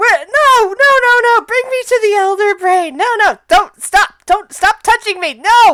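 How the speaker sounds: full-on shrieking screams, very high-pitched. Narrator voicing a creature heard from the room, screaming in Undercommon. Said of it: "she hears Undercommon screaming of".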